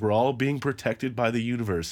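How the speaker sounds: mock cutting, biting sarcasm with heavy mock sincerity. Quoting Samantha's jab at Charlotte: imitating Samantha's sarcastic tone. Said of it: "very sarcastic way that is just such a slam".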